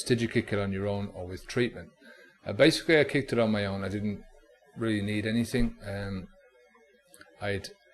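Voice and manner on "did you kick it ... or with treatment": ordinary talk, nothing marked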